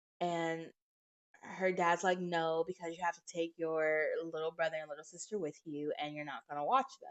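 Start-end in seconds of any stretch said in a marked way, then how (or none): none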